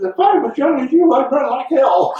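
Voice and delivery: high squeaky voice.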